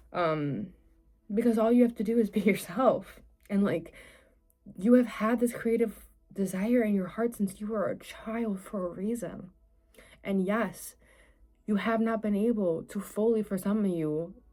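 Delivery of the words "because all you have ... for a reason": moved voice welling with emotion. Speaking to listeners about their creative dreams, getting emotional. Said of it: "like I'm getting emotional".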